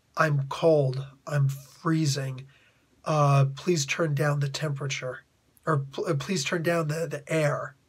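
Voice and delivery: put-on, barely audible, weak, tired, sickly murmur. Speaker mimics a very sick man barely able to mutter, in a tired, sickly voice. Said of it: "in this very tired, sickly voice".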